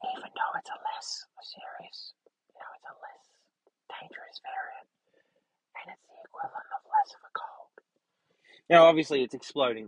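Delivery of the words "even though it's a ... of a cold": very quiet, playful, secretive, conspiratorial whisper. Joking that the Illuminati must not hear, the speaker goes on whispering jokingly. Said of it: "I have to whisper this".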